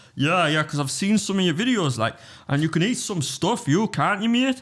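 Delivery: put-on very high-pitched Geordie North East English accent. Retelling what a Geordie man kept saying to him, Geordie accent. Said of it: "He was a Geordie".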